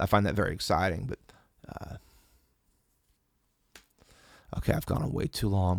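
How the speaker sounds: voice gone, lost voice. Talking on at length about ideas, then wrapping up: voice gone. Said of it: "My voice is gone".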